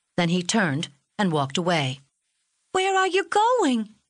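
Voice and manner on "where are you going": very high crying out. A girl calls after a man who is walking away; cried out. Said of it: "cried Polly".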